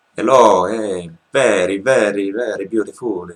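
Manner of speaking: exaggerated heavy Italian accent. Imitating an Italian client speaking English at a work meeting, exaggerated strong Italian accent. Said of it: "had a very strong accent, so she was speaking in this way".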